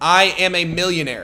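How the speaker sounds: ordinary talk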